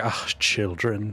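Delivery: muttered under breath. Voicing a character's remark to the group: muttered under her breath. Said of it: "she just says under her breath".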